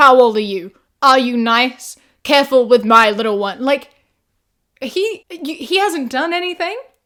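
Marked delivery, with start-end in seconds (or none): 0.0-3.6 mock interrogating, telling-off tone, louder. Retelling how a dad questions a three-year-old boy: imitating an interrogating tone. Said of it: "speak to him with that tone of".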